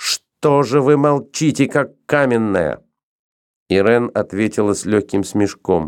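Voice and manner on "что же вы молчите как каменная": shouted, crying out. Reading a novel aloud, voicing a girl addressing another woman: shouted. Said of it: "девушка крикнула".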